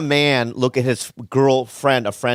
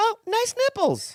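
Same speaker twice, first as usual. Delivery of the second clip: very high, upper-register voice; 5 dB quieter than usual. Repeating a line after being asked to say it higher: higher register. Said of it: "Try it higher register".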